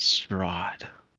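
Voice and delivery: soft voiceless whisper under the breath. Group chat, testing whether anything happens at the name: whispered strahd. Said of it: "I'm gonna whisper it".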